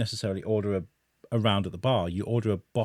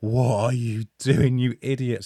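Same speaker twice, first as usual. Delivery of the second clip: put-on shock, higher and louder; 3 semitones higher, 5 dB louder than usual. Retelling meeting a man with bodyguards, he imitates his wife's shock. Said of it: "that look of like shock on my wife's face".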